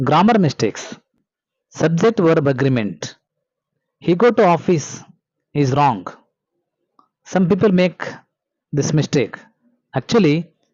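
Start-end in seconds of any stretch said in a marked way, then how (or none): none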